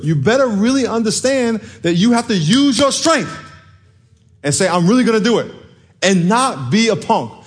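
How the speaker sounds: very high-pitched, full-on shouting. Speaking straight to the audience, shouting at them. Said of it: "why am I yelling at you?".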